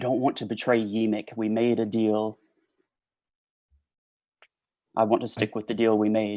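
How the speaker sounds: hushed, close half-whisper. Role-playing a character whispering to a party member: half-whisper. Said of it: "I kind of whisper".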